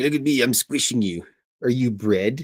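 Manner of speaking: smug, gloating little gremlin cat voice. Voicing the gremlin, imagined piled on top of Missus Filth: voicing the gremlin cat. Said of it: "He's like".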